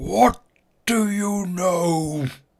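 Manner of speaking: very loud booming wizard voice, "know" stretched. Trying to scare the priest, in a booming Gandalf voice. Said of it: "boom my voice like Gandalf to Bilbo".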